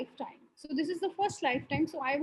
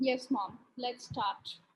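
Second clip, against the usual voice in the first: somber tone. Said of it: "He's in a somber mood".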